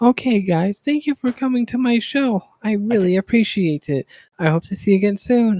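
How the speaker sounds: put-on anime-girl streamer voice. Imitating VTubers ending a stream, in a high-pitched anime VTuber voice. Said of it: "the high-pitched anime VTubers".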